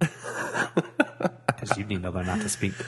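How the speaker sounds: slow, teasing, talking through laughter.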